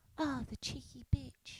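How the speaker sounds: put-on sweet old lady voice. Describing an english person calling someone a cheeky bitch: sweet old lady voice. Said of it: "hearing like a 90-year-old sweet woman like".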